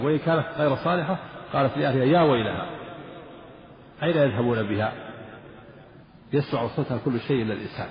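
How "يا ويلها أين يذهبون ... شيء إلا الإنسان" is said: plain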